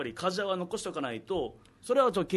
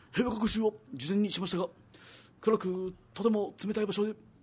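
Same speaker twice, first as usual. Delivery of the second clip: put-on halting, choppy, boyish way of talking. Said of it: "みたいな、なんかそんな喋り方で".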